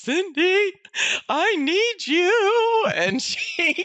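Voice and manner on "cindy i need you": tearful voice, very high pitch and very slow. Retelling calling someone for help in tears, retelling a tearful call. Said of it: "I'm crying at this point".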